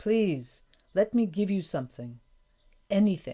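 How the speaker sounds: plain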